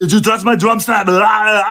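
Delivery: loud, very high-pitched put-on voice. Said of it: "it becomes Arnold".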